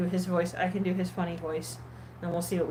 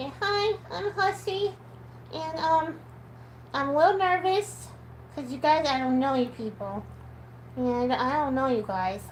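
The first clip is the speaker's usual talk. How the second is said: put-on cute little voice, pitched up and slow; 8 semitones higher than usual. Voicing Huxley introducing himself in videos: cute Huxley voice. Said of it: "I do a cute voice for Huxley".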